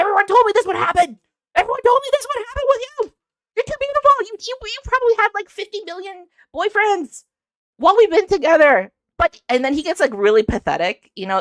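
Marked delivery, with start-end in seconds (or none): 0.0-8.9 acted, very high, raised, blurted-out outburst. Retelling a man's outburst at her, acting out him raising his voice. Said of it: "he starts to raise his voice to her".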